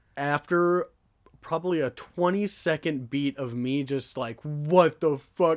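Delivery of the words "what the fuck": mock blurted outburst in sheer panic. Retelling own reaction when a police officer knocks: imitating own panicked reaction.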